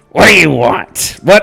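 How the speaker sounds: put-on grumpy, cranky old man voice. Voicing a shop owner as the players walk in: grumpy old man voice. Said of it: "this grumpy old man".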